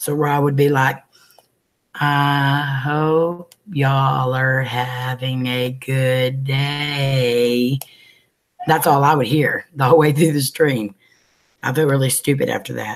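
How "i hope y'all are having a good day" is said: very slow, dragged-out, slowed-down speech. Recounting a lagging livestream, imitating Rob's lagging stream, slowed. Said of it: "making his stream run really, really, really slow".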